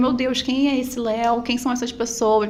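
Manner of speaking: usual speaking voice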